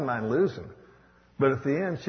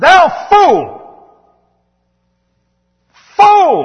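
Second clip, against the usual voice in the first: very loud, very high, shrill swooping shout; 18 dB louder than usual. An ordained speaker quoting god in a parable, with a raised voice, shouting. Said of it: "why I raised my voice there".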